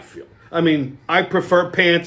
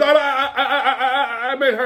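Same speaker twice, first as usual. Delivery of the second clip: put-on stammering in a higher voice; 9 semitones higher than usual. Retelling how a frightened man at a bar answered: imitating someone stammering. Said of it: "He started stammering".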